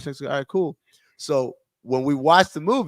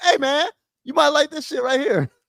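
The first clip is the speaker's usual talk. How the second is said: voice pitched very high; 13 semitones higher, 4 dB louder than usual. Voicing a streaming service that suggests a movie: Pluto TV voice. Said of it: "That's a Pluto T V voice".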